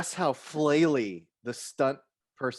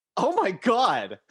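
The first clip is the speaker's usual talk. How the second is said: mock appalled, offended, high, loud gasp of disgust; 7 semitones higher, 6 dB louder than usual. Retelling an audience member's reaction in a theater: imitating a disgusted, offended gasp. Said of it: "The most disgusted, offended".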